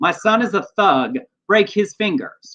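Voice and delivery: ordinary delivery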